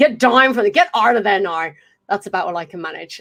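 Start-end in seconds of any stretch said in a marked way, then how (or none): 0.0-1.7 rough, badly done put-on Irish accent. Trying out an accent for viewers, admitting it is not good; bad Irish accent. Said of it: "I'm not going to say it's a good accent".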